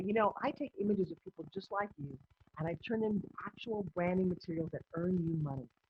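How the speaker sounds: plain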